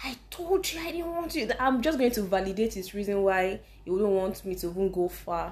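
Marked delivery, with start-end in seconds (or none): 0.0-1.5 very high, screamed, scolding tone. Retelling how a dad reacts to bad news: imitating a screaming dad. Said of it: "He's screaming at you".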